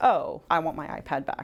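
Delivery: ordinary talk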